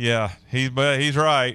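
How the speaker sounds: slow chuckle under the breath. Retelling own past reaction to a remark: retelling own laugh under breath. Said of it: "I kinda laughed under my breath".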